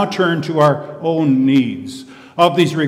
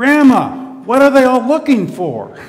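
play-acted, very loud, carrying, high, swooping cry; 8 semitones higher, 4 dB louder than usual. Retelling a five-year-old at a wedding calling to her grandmother: imitating a very loud cry. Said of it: "in a very loud voice, she cried out".

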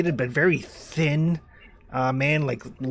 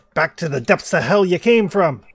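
loud, raised hollering yell; 4 semitones higher, 6 dB louder than usual. A man drives off wild dogs near his things: yelling. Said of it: "he's yelling".

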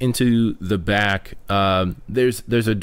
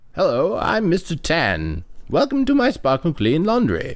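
put-on high, swooping older half-elf voice, perky and sing-song; 5 semitones higher than usual. Voicing a smiling shopkeeper greeting a customer: Mister Tan voice. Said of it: "an older, um, half-elf man sitting behind the desk".

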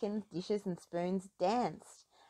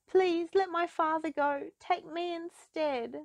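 very high, pleading, begging voice; 10 semitones higher, 4 dB louder than usual. Narrator reading a daughter's plea to a beast for her father: begging. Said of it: "she begged".

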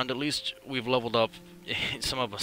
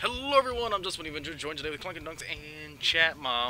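soft, gentle show-host style delivery; 4 semitones higher, 6 dB quieter than usual. Host opening the show and introducing co-hosts, talking fast. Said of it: "Slow down".

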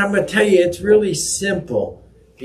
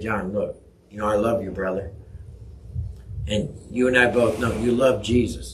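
affectionate, very low and soft voice; 8 semitones lower, 7 dB quieter than usual. Demonstrating how to approach a brother in faith, in a loving voice. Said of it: "if I come to you in a loving voice".

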